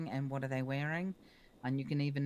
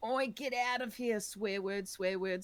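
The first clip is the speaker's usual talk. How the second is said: very loud, high-pitched Australian shouting; 6 semitones higher than usual. Narrator voicing a man who yells at the listener, very loud Australian yelling. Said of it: "yelling at you in very loud Australian".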